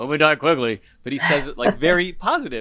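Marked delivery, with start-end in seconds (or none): 0.0-0.8 heroic dramatic delivery, louder. Showing how one of us would normally say it, in a Han Solo manner. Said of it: "in a Star Wars-esque Han Solo manner".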